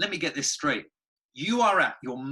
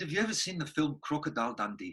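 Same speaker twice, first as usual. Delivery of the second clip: put-on South African accent; 5 dB quieter than usual. Retelling what a South African therapist asked, in a South African accent. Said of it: "And I'll stop the accent now".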